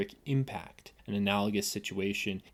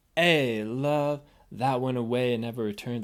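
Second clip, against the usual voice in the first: acted, raised, anguished voice; 3 semitones higher, 6 dB louder than usual. Testing how good an actor they are on a lyric, an attempt at anguish. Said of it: "That's my attempt at anguish".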